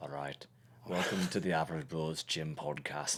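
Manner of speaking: real, quite strong Irish lilt slipped in. Opening the podcast in an attempted Peaky Blinders accent: accidental Irish-sounding accent. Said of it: "now you went real Irish on that one".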